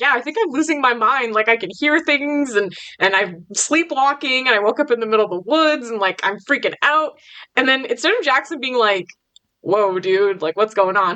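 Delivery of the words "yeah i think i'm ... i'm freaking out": plain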